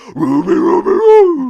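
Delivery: very high, very loud, belted cartoon dog voice. Showing how easy the Scooby-Doo impression is: Scooby-Doo voice. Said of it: "the Scooby-Doo impression's easy".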